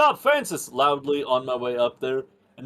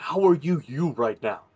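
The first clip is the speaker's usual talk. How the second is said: whispered voice. Whispering in character to Julian during a fight: whispering. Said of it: "I'm gonna whisper to Julian".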